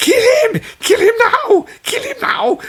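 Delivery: very high, shrill, full-on scream. Describing a man in a movie screaming at people, the speaker is imitating a man screaming. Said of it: "fucking screaming at at people".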